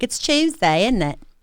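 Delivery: breezy, light put-on British accent. Imitating how British people say a line online: imitating a British accent. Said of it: "every Tuesday, I'm like".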